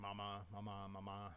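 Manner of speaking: ordinary talk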